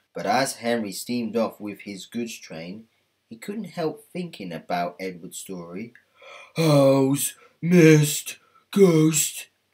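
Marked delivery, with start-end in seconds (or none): 6.6-9.5 very loud, high grumbling, "owls" drawn out. Narrator reads Henry steaming off after Edward's story: Henry grumbling to himself. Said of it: "he grumbled to himself".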